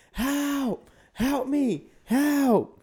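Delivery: very high, slow, stretched-out, drawn-out screaming. Retelling a man clinging onto him in the water, imitating him screaming. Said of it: "he's screaming now like".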